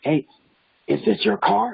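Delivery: raw, rough, high-pitched screaming. Retelling how an angry neighbor came out: imitating a man screaming. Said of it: "he starts screaming".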